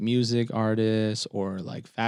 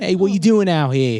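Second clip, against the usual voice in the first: loud, attempted put-on Boston accent; 7 semitones higher, 8 dB louder than usual. Trying out an accent after talking about people from Boston: put-on Boston accent. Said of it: "they're from Boston".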